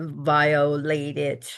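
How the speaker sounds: "violated" drawn out slowly, air between syllables. Recounting using the word with someone who felt violated, slow, breathy 'violated'. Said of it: "I said it in a way that is kind of slow and separated by air".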